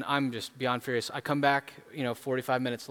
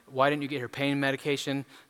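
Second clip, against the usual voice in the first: ordinary talk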